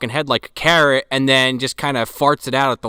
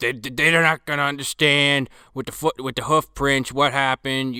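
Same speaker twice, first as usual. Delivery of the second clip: put-on big-shot, cigar-chomping executive voice; 4 dB quieter than usual. Keeping up a bit as a cigar-chomping executive: cigar-chomping executive voice. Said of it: "it's more like this".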